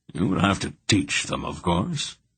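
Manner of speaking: worn-out, weary, tired voice. Reading a story aloud, the old man explaining the creatures need teaching: weary. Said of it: "Belgoroth said wearily".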